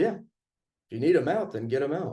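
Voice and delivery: normal talking voice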